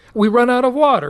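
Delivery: put-on Croatian-accented speech. Retelling what the boat skipper said: imitating a Croatian accent. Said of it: "like in his sort of Russian, Croatian accent".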